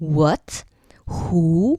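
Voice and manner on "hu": hu said with a slight rising tone. Explaining the tones of Jianghu, rising tone on Hu. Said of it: "which goes up a little bit".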